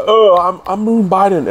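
very slow, high pitched, every word stretched out. Imagining the president teleported into orbit: imitating Joe Biden. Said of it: "and he'd be like".

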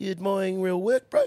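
put-on high, teasing, old man's New Zealand accent.

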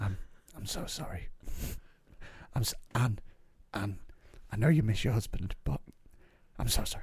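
hushed, breathy whisper. Mocking a man who keeps apologizing over a sad story, imitating a lowered, quiet voice. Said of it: "he lowers his voice and goes really quiet".

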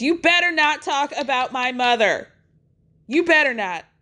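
mock outcry, heated but held in check. Retelling a fight between two women at a table, imitating Candace screaming. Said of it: "she screams".

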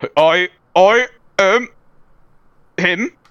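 put-on steampunk robot voice. Asked what a steampunk robot would sound like, doing a steampunk robot voice. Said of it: "give me what a steampunk robot would sound like".

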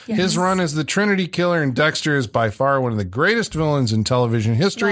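plain

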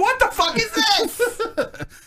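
high, slow baffled disbelief. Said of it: "and they're like".

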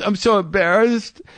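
words sobbed out through tears, tearful crying voice. Retelling a first date where a woman stood up crying; imitating someone crying. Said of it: "stands up crying and goes".

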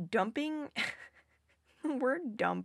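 stifling a laugh mid-word, held-back laughter. Explaining trauma dumping, laughing while talking. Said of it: "I'm trying not to laugh at the word dump".

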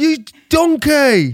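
shrill, high, loud delivery. Doing a requested impression of Gordon Ramsay. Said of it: "Do Gordon Ramsay".

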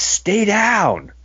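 very high-pitched shout, acted out. Describing a wrestling scene, acting out one wrestler shouting at another, retelling a shout. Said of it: "He's just shouting like".

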